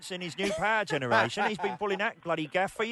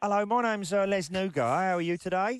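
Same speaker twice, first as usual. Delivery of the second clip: bad, shonky, put-on fake Cockney accent. Making a prank call to a clothes shop, the caller introduces themselves in a shonky Cockney voice. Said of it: "putting on a shonky Cockney voice".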